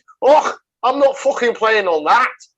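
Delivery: very loud, shrill, bad Scottish accent. Voicing the Scottish team after they saw the pitch, worst Scottish accent ever. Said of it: "Worst Scottish accent ever".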